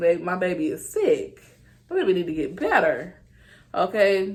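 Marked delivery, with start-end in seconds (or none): none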